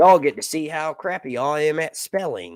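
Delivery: rural outback country Australian accent, laid on. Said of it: "That was a country Australian accent".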